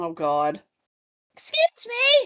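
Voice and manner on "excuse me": very high-pitched wrestling-manager calling voice. Echoing the Vickie Guerrero catchphrase: Vickie Guerrero voice. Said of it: "that's what she feels like".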